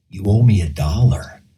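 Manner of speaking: put-on whisper. Retelling a celebrity whispering in his ear: imitating Bill Murray whispering. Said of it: "You sound like him too".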